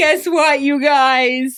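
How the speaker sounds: loud, slow, acted-out crying with "guys" drawn out. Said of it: "called us crying and saying".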